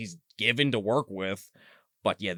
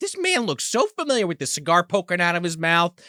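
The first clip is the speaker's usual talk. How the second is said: ordinary talk, nothing marked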